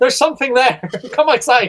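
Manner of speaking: high-pitched, loud shouting alarm voice. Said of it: "me acting as a security camera, just shouting".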